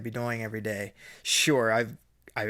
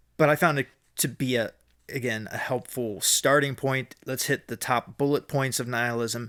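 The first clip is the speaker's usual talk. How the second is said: ordinary talk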